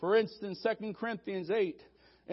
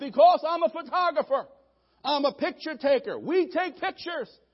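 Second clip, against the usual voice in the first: mock, slightly upset yell, raised and high; 6 semitones higher, 6 dB louder than usual. In a story, voicing the photographer answering the nervous pilot: retelling an upset yell. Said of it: "a little upset, he yelled".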